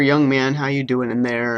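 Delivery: ordinary talk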